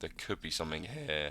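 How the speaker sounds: soft voice breaking and cracking mid-phrase. Talking through price levels when the voice gives out: voice cracking. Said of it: "sorry for the voice just broke".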